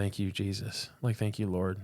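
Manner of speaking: put-on tearful weeping. Retelling thanking jesus after feeling ungrateful, re-enacting tearful weeping. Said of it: "I just started weeping".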